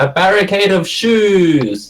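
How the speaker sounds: high in-character yell with "shoes" drawn out. Voicing a swimming character who calls out for a barricade: yelling in character. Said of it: "I yell out".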